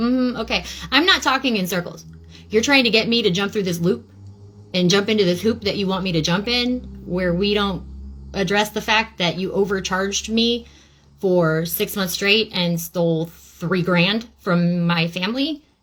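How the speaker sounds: plain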